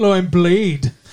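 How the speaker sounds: put-on Liverpool-accented speech. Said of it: "So he sounds like the Beatles".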